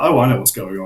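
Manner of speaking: plain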